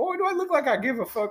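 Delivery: put-on Southern accent, pitched very high. Quoting the man who hired him, in a southern accent. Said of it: "he had the best Southern accent I've ever heard".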